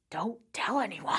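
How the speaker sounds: hushed, soft, secretive whisper aside. Retelling how a man keeping up appearances whispers to the others, retelling a whisper. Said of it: "just like whispers to them like".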